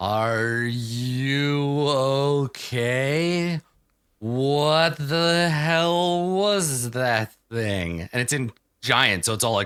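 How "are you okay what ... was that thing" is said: each word dragged out very slowly, pitched up. As Amira, coming over to Maharib in the game, speaking very slowly. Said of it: "says very slowly".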